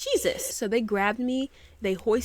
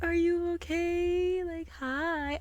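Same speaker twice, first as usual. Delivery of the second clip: put-on very slow, drawn-out, high baby-voice cooing; 8 semitones higher, 3 dB quieter than usual. Recounting people crowding the speaker after a spell: imitating cooing baby voice. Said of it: "cooing at me in this baby voice".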